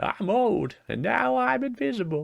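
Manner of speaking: put-on very high-pitched old man voice. Voicing a character you decided sounds like Master Roshi; Master Roshi voice. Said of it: "I decided he sounds like um".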